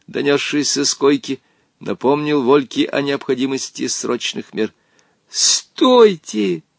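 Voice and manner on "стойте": very high, loud shouting. Rushing to separate two others while someone lies dying: shouting. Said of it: "закричал он".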